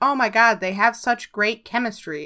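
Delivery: plain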